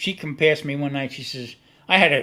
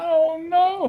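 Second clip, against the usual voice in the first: play-acted crying out, pitched very high. Retelling the car going airborne at a railroad crossing, imitating the driver crying. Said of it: "She starts crying".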